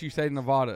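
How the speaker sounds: ordinary delivery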